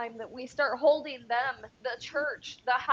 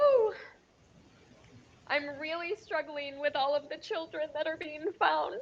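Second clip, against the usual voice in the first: teary voice, higher and faster; 3 semitones higher than usual. Telling the listener you've been crying for the past hour, in a teary voice. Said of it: "I've been crying like for the past hour".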